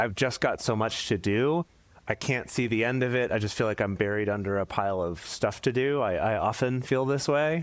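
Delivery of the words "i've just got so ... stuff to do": ordinary talk, nothing marked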